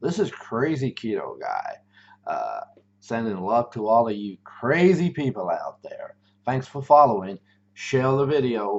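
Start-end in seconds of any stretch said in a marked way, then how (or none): 0.0-1.7 put-on, swooping American accent. Signing off a video as crazy keto guy, doing an american accent. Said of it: "I even do the American accent".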